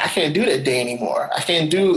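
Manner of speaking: ordinary talk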